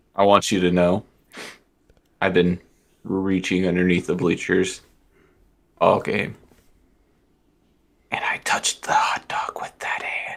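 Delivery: whispering in a character voice. Taunting another character in a game scene, whispering in character. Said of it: "I hope you can hear me whisper".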